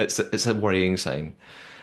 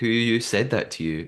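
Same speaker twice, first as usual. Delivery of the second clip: plain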